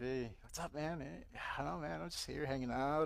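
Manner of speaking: breezy, put-on casual, trying-to-be-cool chatter. Retelling running into someone from church while high: imitating acting all cool. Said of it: "I'm acting like I'm all cool".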